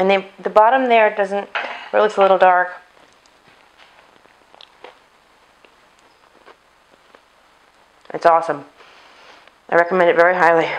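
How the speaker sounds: speaking with mouth full, chewing. Tasting a cake the speaker just baked, talking with mouth full. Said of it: "Pardon my full mouth".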